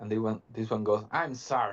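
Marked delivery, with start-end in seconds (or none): 1.1-1.7 grumpy, grouchy kobold creature voice. Voicing a kobold introducing itself: grumpy kobold voice. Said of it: "he seems a bit grumpy all of a sudden".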